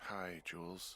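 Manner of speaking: drowsy, sleepy, tired just-woken voice. Woken up and picking up the radio to Jules, sleepy, tired voice. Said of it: "you sound tired".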